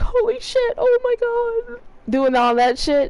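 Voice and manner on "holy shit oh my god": slow, very high, drawn-out horror-movie panicked cry. Explaining how characters should sound, the speaker does a mock-scared Friday the 13th scream. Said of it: "when they get scared, they be like".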